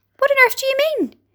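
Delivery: very high, shrill, sudden crying out. A group answers the ladybird's question, crying out. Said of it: "they cried".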